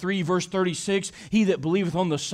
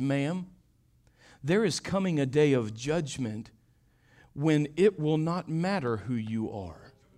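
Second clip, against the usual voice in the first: mild, gentle, low, soft voice; 4 semitones lower, 5 dB quieter than usual. Retelling how a man answered a haughty woman, in a gentle voice. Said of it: "with a gentle voice".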